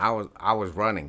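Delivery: ordinary delivery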